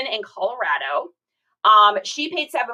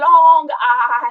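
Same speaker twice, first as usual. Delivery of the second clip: bad put-on English accent, higher and louder; 4 semitones higher, 8 dB louder than usual. Trying out a voice on a live stream: bad Patrick Stewart impression. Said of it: "That was my really bad impression".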